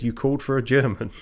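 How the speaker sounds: usual speaking voice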